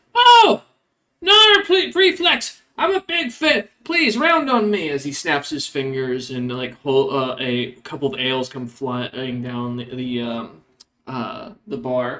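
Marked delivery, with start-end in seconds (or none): 0.2-4.9 tiny kobold voice, very high and loud. Voicing a kobold barkeep greeting a famous patron: kobold barkeep voice. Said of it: "looks up and goes".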